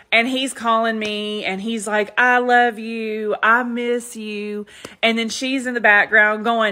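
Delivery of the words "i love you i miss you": mock, very slow, drunken rambling. Retelling a late-night phone call from a partying ex: imitating a drunk caller. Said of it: "so they're drunk".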